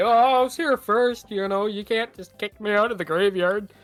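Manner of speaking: taunting mockingly. Walking away after being kicked out of the graveyard, speaking mockingly. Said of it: "I'm just mockingly I'm gonna say".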